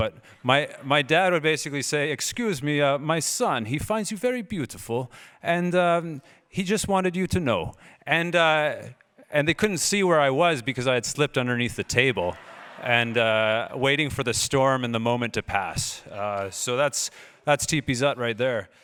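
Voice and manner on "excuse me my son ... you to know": failed put-on Dutch accent, drifting into Russian-sounding. Retelling his dad calling the waitress over, in a bad Dutch accent. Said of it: "I can't do a Dutch accent, it comes out Russian".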